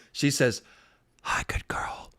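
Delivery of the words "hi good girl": hushed, soft, airy, breathy whisper. Imitating how she greets the speaker: imitating a whisper. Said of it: "she only talks to me in whispers".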